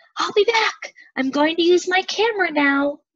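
high-pitched shout, calling out. Hurrying out the back door, calling to her mom and dad: shouting. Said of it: "shouting to her mom and dad".

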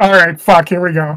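plain

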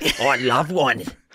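put-on, fake Australian accent. Answering whether one would want an australian accent: put-on australian accent. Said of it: "An Australian accent, mate".

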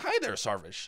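high, put-on reporter voice, pitch lifted. Redoing the greeting as the Vice guy, in a higher-pitched Vice guy voice. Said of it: "I have to do a higher pitch voice".

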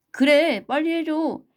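high, loud crying-out call. Reading the other animals calling after the departing mouse, shouting. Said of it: "다른 동물들도 못하게 외쳤다".

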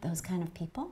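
whispered echo, questioning tone. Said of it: "he's whispering".

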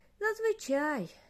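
very high little snort of a word, scoffing. A gnome girl in a story answers a question, snorting. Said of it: "форкнула гномочка і глибоко зітхнула".

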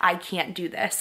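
mock sobbing, fake crying sound. Retelling sobbing during a painful contraction: imitating sobbing. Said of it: "was sobbing and I was like".

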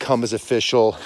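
ordinary talk

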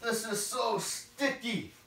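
high-pitched voice groaning through every word. Describing being stuck in the mud, groaning. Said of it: "(groaning noises)".

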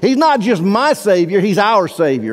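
"my" left unstressed, emphasis lands on "our".

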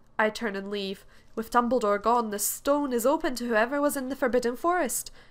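ordinary delivery

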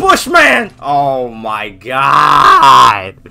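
anguished, loud, stretched-out yell.

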